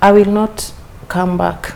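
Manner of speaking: usual speaking voice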